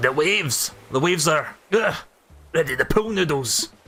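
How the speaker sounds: gruff, put-on Scottish sea-captain voice. Voicing a character while showing off coconut trees, gruff Scottish captain voice. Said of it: "I'm going for like a gruff Scottish captain voice".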